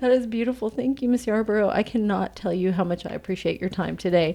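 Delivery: emotional, tearful, choked-up speech. Thanking a guest for her time, speaker is in tears. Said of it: "I'm sorry, I'm in tears".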